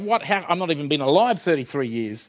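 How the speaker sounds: ordinary delivery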